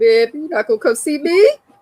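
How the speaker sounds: put-out, reproachful, annoyed, pitched high, acted out. Retelling what a man said when she didn't go see him: retelling him being mad. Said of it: "He was mad I didn't see him".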